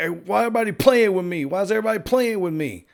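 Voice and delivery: put-on petulant, babyish, childish, high-voiced tone. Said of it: "acting like a child".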